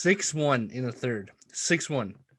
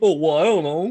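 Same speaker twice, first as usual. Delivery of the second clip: loud, booming voice; 4 semitones higher, 9 dB louder than usual. Retelling what a friend said in the chat: imitating a friend. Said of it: "That's a good impression".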